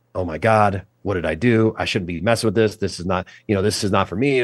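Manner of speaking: put-on, frantic, panicked voice. Lying paralyzed, the speaker retells panicking in their head, retelling own panic. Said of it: "I start panicking".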